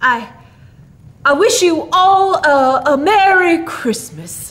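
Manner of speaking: halting, stumbling delivery. A guest speaks to his host before leaving: faltering. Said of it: "faltered Santa Claus".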